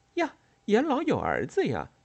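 astonished, surprised outburst, very high pitch. Hearing that the man just introduced is an elder's son: surprised. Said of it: "美代子惊讶地说".

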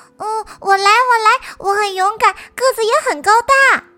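calling out loudly. Narrator reads a character answering a call for a brave dinosaur, shouting right away. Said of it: "阿瑟立即喊道".

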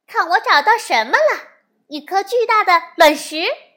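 high, proud, gloating triumphant shouting. Jessica calls out about her find, in a proud, gloating shout. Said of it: "洋洋得意地喊着".

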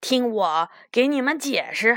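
ordinary delivery

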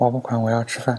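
plain

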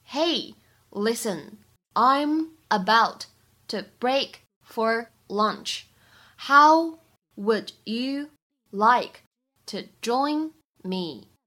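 very slow, careful word-by-word reading.

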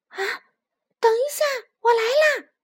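high, loud shout. In a story, the little fox sees his friend fall into the stream: shouting. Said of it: "小狐狸喊道".

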